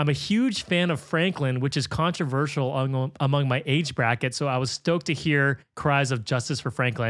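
ordinary delivery

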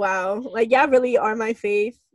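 ordinary talk

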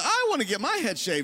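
small, goofy, silly little voice. Speaker retells what Josh said about shaving his head, in Josh's little voice. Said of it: "that little voice".

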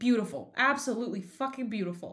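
biting, sassy sarcastic voice. Retelling a driver's radio message after a slow pit stop: imitating sarcastic sassy radio message. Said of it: "very sarcastic and sassy on the radio".

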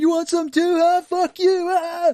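very high, loud, dragged-out shouting. Joking about a dad blasting his child with a toy gun: shouting like Bill Paxton. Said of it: "was he shouting like, uh, Bill Paxton".

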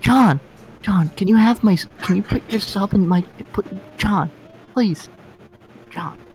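high, nasal, stumbling pleading voice. Imitating Joe asking John for something: imitating Joe's nasal voice. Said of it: "when he sounds like this".

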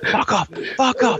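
put-on fierce, aggressive, angry yelling, pitched very high. Retelling shouting at a dog while running: retelling an aggressive shout. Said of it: "I was shouting at it very aggressively".

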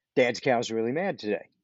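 usual speaking voice

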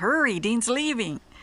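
blurted out. A nurse runs into the room and blurts it out. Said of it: "she blurted out".

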